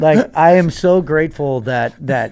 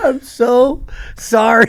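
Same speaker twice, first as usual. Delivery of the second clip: speaking while laughing, cracking up, higher pitch; 8 semitones higher than usual. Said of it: "he can't even get the words out".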